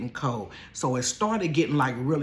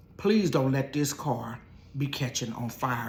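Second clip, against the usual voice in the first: plain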